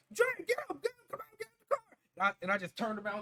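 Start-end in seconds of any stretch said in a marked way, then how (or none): 0.2-1.9 put-on panicked shout, higher pitched. Retelling how a teammate yelled after their tire was shot: imitating someone panicking. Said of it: "he was panicking".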